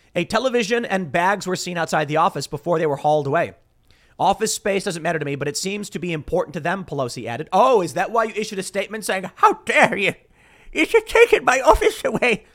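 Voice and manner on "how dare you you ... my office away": put-on odd, slow, high Irish old-man brogue. Mocking a politician's statement, the speaker voices Pelosi in an Irish old man accent. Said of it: "strangely an Irish old man accent I was doing".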